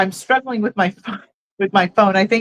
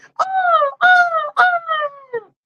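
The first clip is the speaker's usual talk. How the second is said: squawking seagull cries, very high and drawn out. Exclaiming on a live stream: sounding like a seagull. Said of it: "I don't know why I sounded like a seagull".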